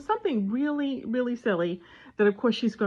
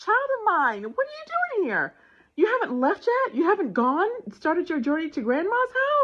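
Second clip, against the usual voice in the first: very high, put-on, astonished voice; 10 semitones higher than usual. Retelling opening the door to a child who knocked: retelling acting really surprised. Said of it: "And I looked really surprised".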